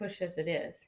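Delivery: plain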